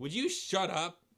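curt, irritated snap. Reading a story aloud, voicing Barney's line: snapping. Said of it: "Barney snaps".

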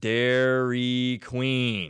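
very slow, drawn-out speech. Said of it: "I want you just to speak very slowly".

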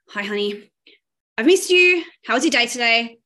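loud, hollow, insincere, going-through-the-motions delivery. Showing how greeting honey sounds without regulation, in an insincere tone. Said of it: "But it will come out like this".

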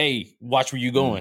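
put-on hostile, confrontational, drunk-sounding voice. Acting out drunk dudes after someone bumps into them: mock-hostile tone. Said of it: "the tone, you know, makes it more hostile".

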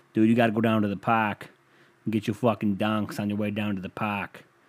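botched, butchered put-on Boston accent. Imitating a guy from Boston he follows, bad Boston accent. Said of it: "I fucking butchered it".

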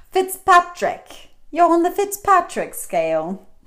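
attempted English accent. Speaker retries saying the skin-scale name in an accent, english accent. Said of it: "I said things in an English accent".

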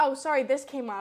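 plain

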